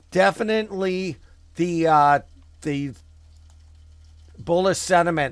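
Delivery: stuttering. Going over the markets for viewers as a stock suddenly jumps, stuttering. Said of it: "the reason I'm stuttering".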